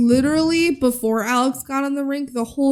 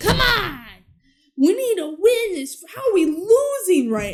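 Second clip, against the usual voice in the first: put-on yell, higher; 5 semitones higher than usual. Retelling a scene where the coach yells at the team: imitating a coach yelling. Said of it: "the coach is yelling at them".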